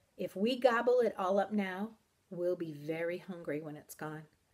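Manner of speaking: ordinary delivery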